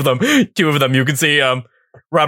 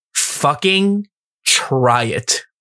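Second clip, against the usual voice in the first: combative delivery, slowed down. A game narrator voices Rachel stepping in to stare down a player: combative dare. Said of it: "more like a fighting try it".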